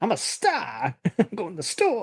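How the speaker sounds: showy celebrity voice, high, swooping up and down. Joining in on a full impersonation of the actor: Christopher Walken impression. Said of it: "impersonation of him".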